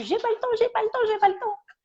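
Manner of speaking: tiny, shrill, very high, rapid, squeaky voice. Speaker relays what an animal told her in animal communication; small high-pitched voice. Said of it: "avec une petite voix aiguë".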